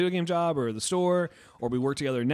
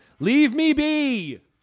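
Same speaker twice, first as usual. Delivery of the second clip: shouted cry, high pitched, loud and drawn out. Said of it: "like some, like, Victorian, like, person on the run".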